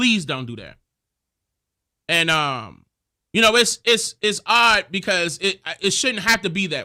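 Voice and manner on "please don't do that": imitated crying, tearful pleading tone. Speaker recounts people who begged them; imitating someone crying. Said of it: "some of them was crying".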